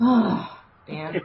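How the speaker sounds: exasperated sigh carried over the words. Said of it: "you just sigh, like".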